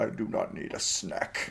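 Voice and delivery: sassy, near-whispered retort. Player reacting to a God of War scene, mock-sassy Kratos impression. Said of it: "in an in a sassy voice".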